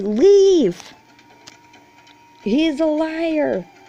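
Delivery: screaming at the top of lungs, high and loud.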